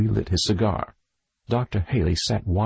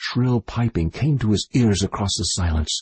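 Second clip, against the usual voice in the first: ordinary delivery, nothing marked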